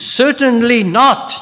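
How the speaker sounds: indignant, emphatic tone. Quoting what is said in verse 2, voice raised a little. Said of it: "you know why I raised my voice there a little bit?".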